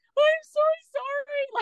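weepy, tearful, very high-pitched voice. Speaker retells running up, in tears, to the woman after yelling at her courier. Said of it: "I'm in tears again".

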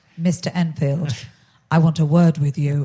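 mock, acted-out deadpan delivery. Retelling walking up to Harry Enfield after he impersonated the speaker, mock deadpan. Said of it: "with an absolute deadpan face and I went".

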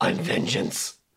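hushed, breathy whisper. Telling a friend the best bit they missed without sound, in Robert Pattinson's Batman voice. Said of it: "you heard his Batman voice".

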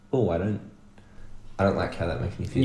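usual speaking voice

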